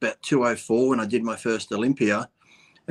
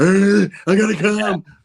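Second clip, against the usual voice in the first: mock wild, loud, high-pitched screaming; 9 semitones higher, 6 dB louder than usual. Teasing a guest who makes noise lifting weights, acting out his lovemaking; mock screaming. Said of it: "You start screaming".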